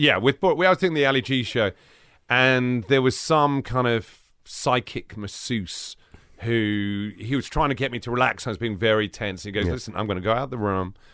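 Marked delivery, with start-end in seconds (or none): 9.7-10.9 terrible put-on American accent, fast. Retelling what a psychic masseuse told him on a show, terrible American accent. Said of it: "Pardon my terrible American accent".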